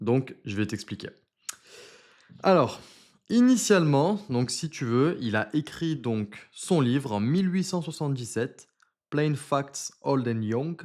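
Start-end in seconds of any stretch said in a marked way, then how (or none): 9.1-10.8 put-on English accent. A French speaker says an English book title, in an English accent. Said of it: "voilà mon accent anglais".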